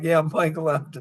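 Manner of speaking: acted choked-up, tearing-up voice. Retelling what he told the company president, retelling tearing up. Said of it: "I started tearing up".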